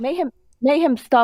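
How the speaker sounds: high, sharp scolding voice.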